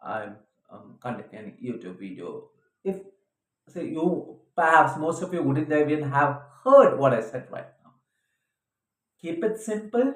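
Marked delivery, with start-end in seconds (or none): 0.0-2.5 very soft, very low, quiet, lifeless delivery. Showing what a voice that is too low sounds like: voice too low, sounding dead. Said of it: "your voice is too low and you're kind of sounding dead".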